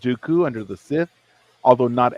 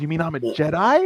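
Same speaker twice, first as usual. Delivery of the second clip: put-on, bubbling with excitement, eager voice; 4 semitones higher than usual. Retelling a scene where Omega asks about being a Jedi: excited Omega impression. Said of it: "you can see that Omega's very excited. She goes".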